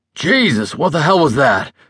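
sudden burst of exclaiming voice. Eli, a passenger, exclaims to the driver after something hits the road. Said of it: "the passenger exclaimed to the driver".

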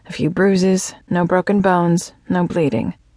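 ordinary delivery, nothing marked

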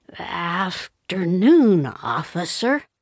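resigned mumble with a sigh. Christopher reluctantly turns around to greet an officer, with a resigned mumble. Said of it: "With a resigned sigh, he mumbled".

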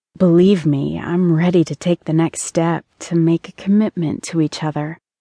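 ordinary delivery, nothing marked

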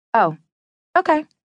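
high, briefly confused, puzzled, caught-off-guard tone. On the phone, thrown by the other man's demeanor, momentarily confused. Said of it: "momentarily confused at his demeanor".

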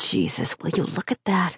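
low, quiet muttering under the breath. A narrator voicing a man beside the narrator at a scene, muttering. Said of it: "He muttered".

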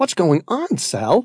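high, frightened, terrified tone. As men with flashlights unfold duffel bags, Matt asks Sal: terrified question. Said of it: "Matt asked, terrified now".

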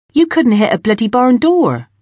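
lively, spirited voice. Markham, in an argument with the narrator, replies with spirit. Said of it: "replied Markham with spirit".

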